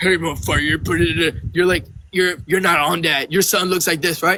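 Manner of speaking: mock low deep voice. Retelling a man's phone calls to the speaker; imitating his deep voice. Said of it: "he would call me with his deep voice".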